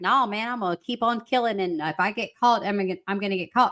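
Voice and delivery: ordinary talk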